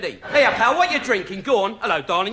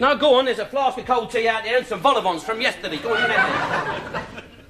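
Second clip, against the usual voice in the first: usual speaking voice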